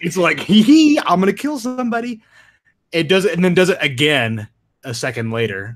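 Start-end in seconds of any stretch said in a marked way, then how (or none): 0.4-2.2 mock gleeful, smirking villain voice, higher and louder. Retelling how the dinosaur smiles at the camera: imitating a smirking dinosaur. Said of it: "the Indoraptor fucking looks and smiles at the camera".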